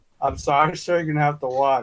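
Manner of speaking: usual speaking voice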